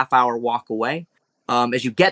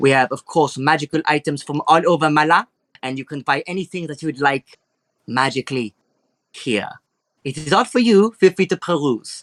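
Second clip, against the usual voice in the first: put-on French-type accent. Voicing an elegant shopkeeper greeting customers in her shop: French-type accent. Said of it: "a French type of accent going on here".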